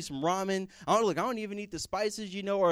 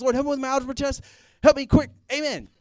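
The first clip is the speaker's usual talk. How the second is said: hasty, rushed, very loud, high delivery; 6 semitones higher, 11 dB louder than usual. Illustrating a four-second prayer said while rushing out of class: mock hurried prayer. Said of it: "this four-second prayer when you're rushing".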